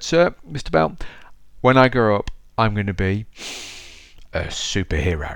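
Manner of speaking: put-on, very proud, grand tone. Retelling telling the teacher a childhood dream: imitating saying it very proudly. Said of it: "and very proudly".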